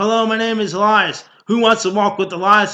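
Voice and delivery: very loud, high, belted out as if filling an arena. Retelling what a wrestler said before the match: imitating Elias. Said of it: "Elias Samson was going like this".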